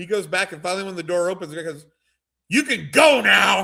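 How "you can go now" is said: very slow, loud, drawn-out, rough yell. Retelling a train trip, the man at the door yells to everyone, imitating someone yelling. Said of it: "He's like yelling at the whole".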